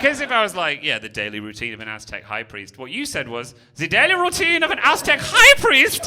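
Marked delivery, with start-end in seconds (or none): 3.8-6.1 very high, very loud put-on German accent. Speaker repeats what the german addressee said: german accent. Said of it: "sounds even better in a German accent".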